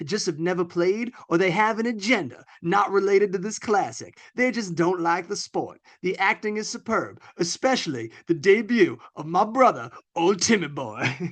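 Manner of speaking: voice like a cartoon rooster. Reading them aloud to a listener, in a Foghorn Leghorn voice. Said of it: "you're reading them like Foghorn Leghorn almost".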